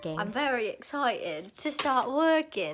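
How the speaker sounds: very drawn-out, slow, put-on British accent. Saying they are excited to start working, in a British accent. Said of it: "I don't know why I said that in a British accent".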